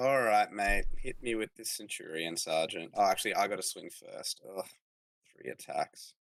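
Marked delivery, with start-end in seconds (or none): 4.6-6.1 soft, crestfallen, defeated, dejected groan. Reacting to getting only three attacks in a tabletop game: sounding sad. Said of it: "You sound so sad now".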